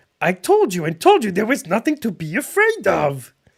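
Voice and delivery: loud, high, swooping-pitch, animated furry puppet monster voice. Reading aloud from a book where Grover scolds the reader, Grover voice. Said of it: "That wasn't quite good".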